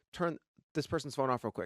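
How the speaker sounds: ordinary talk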